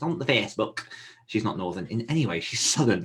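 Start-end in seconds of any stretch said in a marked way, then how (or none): 0.0-0.8 put-on Yorkshire accent. Repeating a phrase the way their mum says it, yorkshire accent. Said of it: "I don't know why I did freaking Yorkshire".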